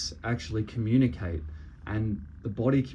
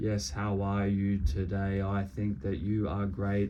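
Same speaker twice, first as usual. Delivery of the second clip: flat, level, expressionless monotone delivery. Contrasting a monotone voice with a lively one, flat monotone voice. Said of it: "your body language and your voice is very monotone".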